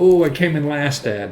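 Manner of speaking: plain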